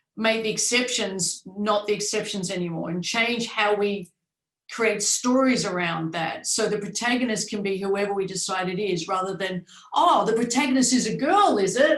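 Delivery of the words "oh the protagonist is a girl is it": raised voice full of surprise. Acting out a reaction to avoid in storytelling: mock-surprised tone. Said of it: "With surprise in my voice".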